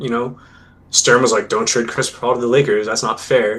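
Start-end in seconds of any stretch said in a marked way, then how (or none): none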